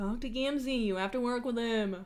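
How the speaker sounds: very mocking, needling tone. A narrator voicing Solix's line in a story, Solix, quiet and mocking. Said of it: "Solix says in a quiet but very mocking voice".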